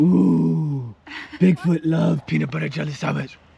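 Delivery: loud, booming, rough creature voice with stretched "ooh". Playing Bigfoot in a pretend game, the speaker talks in a Bigfoot voice. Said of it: "I'm talking like this because I'm Bigfoot".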